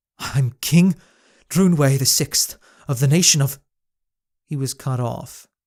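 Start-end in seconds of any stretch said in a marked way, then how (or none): 0.2-3.6 desperate gasping for air, struggling, much louder. A king crushed under a beast's weight names himself: gasping, struggling to speak. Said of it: ""I'm King [name] the Sixth, / the king tried to think of his next move. / Taking deep, desperate gasps of air, the king managed to struggle out".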